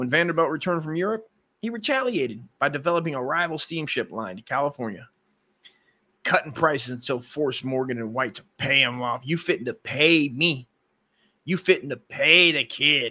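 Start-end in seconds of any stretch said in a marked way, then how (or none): 9.2-13.1 slow, laid-on cartoonish street-tough voice.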